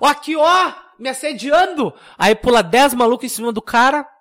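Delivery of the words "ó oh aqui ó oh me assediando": mock woman's high, loud shout. Retelling how a woman at a party shoved a guy, retelling her shout. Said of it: "dá um empurrão no cara e começa a gritar".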